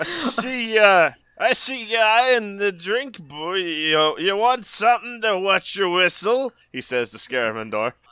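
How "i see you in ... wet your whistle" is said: put-on old-man voice, much higher. Narrator voices an old man offering a drink to Scaramendor, old man character voice. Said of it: "you see the withered husk of an old man. ... "Hey, bro!".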